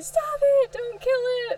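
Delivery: very high, frantic, panicked shrieking. Recalling the dogs attacking a groundhog, the speaker re-enacts past screaming. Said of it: "all he heard was me screaming".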